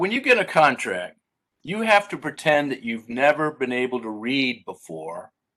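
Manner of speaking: plain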